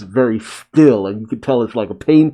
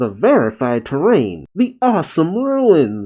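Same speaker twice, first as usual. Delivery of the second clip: high, swooping pitch in a cartoon hero voice; 5 semitones higher than usual.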